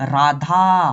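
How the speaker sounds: loud call, final aa of Radha drawn out. Showing the vowel used when calling someone's name: drawn-out final vowel in Radha. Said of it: "देखो हम लोग पुकार रहे कि नहीं नाम".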